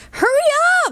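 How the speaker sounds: very high, shrill yell. Narrator voicing Katie calling out to Cameron; yelled. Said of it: "yelled Katie".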